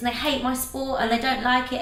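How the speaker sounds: plain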